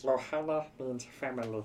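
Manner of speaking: very quiet, softly murmured cartoon voice. Doing the voice another speaker asked about: Stitch voice. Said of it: "that was the voice".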